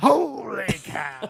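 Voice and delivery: creaky, scratchy, rough, high-pitched burst pushed out. Imagining a car honk that sounds like Harry Caray: Harry Caray impression. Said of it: "the Harry Carey honk would be".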